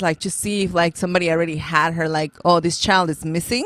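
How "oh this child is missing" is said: ordinary talk, nothing marked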